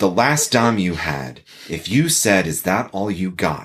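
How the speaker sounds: put-on, bone-dry, matter-of-fact, unbothered deadpan delivery. Recounting a negotiation, the speaker retells their answer: retelling a deadpan reply. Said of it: "I look at them deadpan and say".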